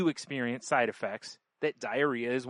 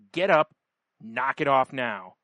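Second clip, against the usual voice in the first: loud, stern, acted-out dreadful voice; 7 dB louder than usual. Retelling how a mom ordered her screaming kid up: imitating a mom's voice of death. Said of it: "the voice of death".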